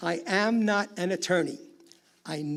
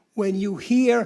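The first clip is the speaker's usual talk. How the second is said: usual speaking voice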